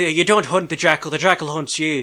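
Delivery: bad put-on Irish accent. Mocking an actor's horrendous Irish accent from the first season: David Boreanaz's bad Irish accent. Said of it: "David's, like, Irish accent".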